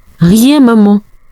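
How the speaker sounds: quavering, unsteady, trembling voice. Asked by his surprised mother what happened, the boy answers in a trembling voice. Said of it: "avec une voix tremblante".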